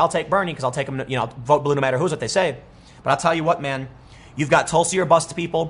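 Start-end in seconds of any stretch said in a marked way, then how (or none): none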